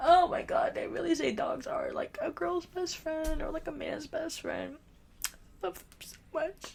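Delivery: soft, tearful talking through crying. Speaking to a listener about her dog, crying while talking. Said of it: "I keep saying that and I keep crying".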